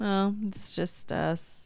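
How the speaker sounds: very slow, let-down, disappointed tone. Retelling how they just sounded about a missing member: imitating own disappointed tone. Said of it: "I realize I probably sound like".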